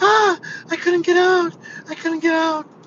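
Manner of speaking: put-on very high, shrill, loud little old lady voice. Retelling how an old lady stuck in the back seat complained: imitating the little old lady. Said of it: "'cause she's like".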